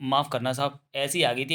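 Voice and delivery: ordinary talk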